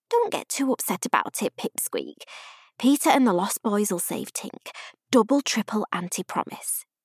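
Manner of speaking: usual speaking voice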